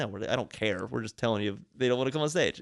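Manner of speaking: normal talking voice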